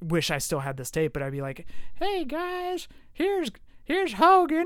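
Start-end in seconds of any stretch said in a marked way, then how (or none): 1.9-4.7 squeaky cartoon voice, very high and very slow. Recalling a voice once used on an old tape, South Park character voice. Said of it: "I sound like a South Park character".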